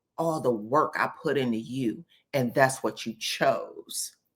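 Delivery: quiet, low mutter under the breath. Retelling a reality show scene, imitating a mutter under the breath. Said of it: "she says under her breath".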